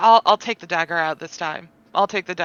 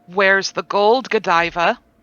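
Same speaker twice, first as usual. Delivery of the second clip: imitated intense voice. Player recounting holding a character down and questioning her: retelling an intense voice. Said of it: "speak with a more intense voice".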